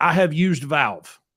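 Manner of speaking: put-on loud, heavy, thick, laid-on Eastern European accent. Quoting the man who kept asking five hundred dollars, thick eastern european accent. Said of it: "really thick Eastern European accent".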